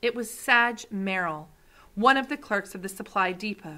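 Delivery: ordinary delivery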